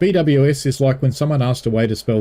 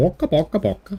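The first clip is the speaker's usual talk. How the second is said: high, puppet-like mock-Swedish nonsense chatter; 6 semitones higher than usual. Responding to a comment about the Swedish pronunciation of bus, doing a Swedish Chef voice. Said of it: "Or is that just Muppet Swedish?".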